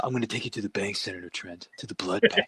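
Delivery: dry, deadpan delivery with no flourish. Quoting a movie line in a dry Steven Seagal voice. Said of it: "that dry voice of his".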